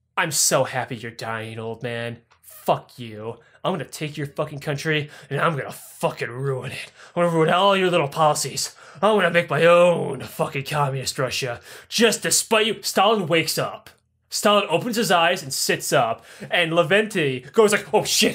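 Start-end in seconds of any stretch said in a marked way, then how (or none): 0.2-12.8 mock threatening whisper, lower. Telling a history story, speaker acts out a man at dying Stalin's ear: retelling a whisper. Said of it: "whispers into his ear".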